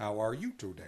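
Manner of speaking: put-on robot voice like a talking toy. Showing another speaker how the old toy sounded: Speak and Spell voice. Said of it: "Like a robot voice?".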